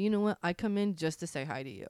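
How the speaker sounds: normal talking voice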